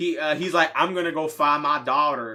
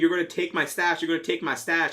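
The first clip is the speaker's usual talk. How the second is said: mock accusing half-shout, said twice; 2 semitones higher than usual. Retelling a movie scene where a man grabs a bat: imitating someone screaming. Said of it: "he's screaming".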